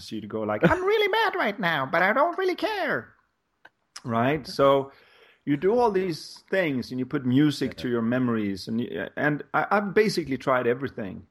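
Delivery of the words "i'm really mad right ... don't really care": squeaky, sing-song voice, way up in pitch. Demonstrating how you could sound when you were mad, in a Mickey Mouse voice. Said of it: "you could sound like Mickey Mouse when you were mad".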